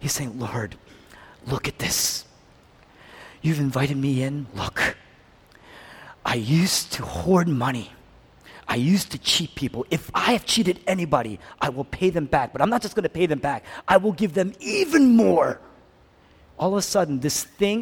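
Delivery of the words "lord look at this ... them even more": put-on, overjoyed, joyfully excited voice. Acting out a repentant man promising to repay people: acting out overjoyed speech. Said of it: "He's so overjoyed".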